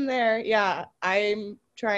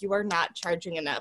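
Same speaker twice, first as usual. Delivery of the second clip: usual speaking voice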